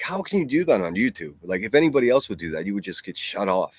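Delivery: plain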